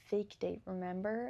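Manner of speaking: normal talking voice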